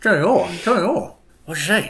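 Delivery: mock talking with mouth full. Voicing Badger, who is chewing worm kebabs: talking with mouth full. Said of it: "his mouth full".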